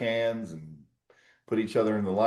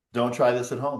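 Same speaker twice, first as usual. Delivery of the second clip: normal talking voice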